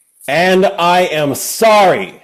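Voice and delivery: very loud, forced tone. Told by another player to say it louder, delivering the line louder. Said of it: "You can say it louder".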